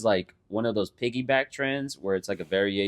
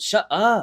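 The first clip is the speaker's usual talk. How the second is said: very high, raised, bitchy little bratty snap; 10 semitones higher, 6 dB louder than usual. Retelling hearing own voice in an edited video: imitating own bratty tone. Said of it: "I sound so bratty and bitchy".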